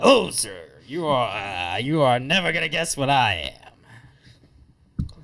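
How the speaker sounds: put-on drunk voice. Playing a drunk bodyguard who approaches a gentleman's table: acting drunk.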